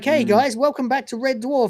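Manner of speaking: snide, sarcastic mock cheery TV host voice. Mocking a scene by acting out the show welcoming viewers: mocking Red Dwarf as a host. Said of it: "It's like".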